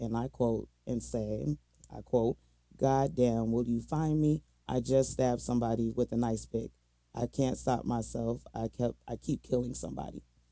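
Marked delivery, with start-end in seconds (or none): none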